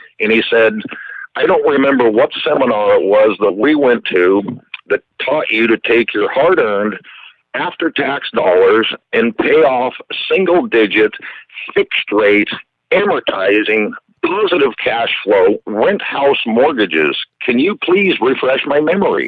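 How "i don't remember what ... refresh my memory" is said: ordinary delivery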